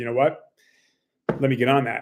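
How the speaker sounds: plain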